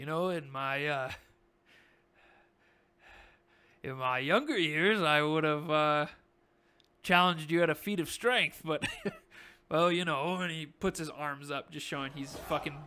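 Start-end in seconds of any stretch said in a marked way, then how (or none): 0.0-10.4 put-on old farmer voice, louder. Voicing Barthen, who looks up at Orin: voicing Barthen. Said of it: "And he looks up at you and he goes".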